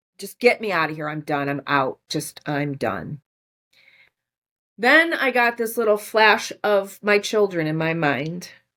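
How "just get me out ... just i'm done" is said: tearful voice, crying and broken by sobs. Retelling sitting in the car wanting to give up: retelling own past crying. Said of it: "I'm crying".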